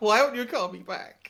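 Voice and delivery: high, drawn-out, blubbering fake sobbing. Imagining someone sitting by the phone calling out: mock crying.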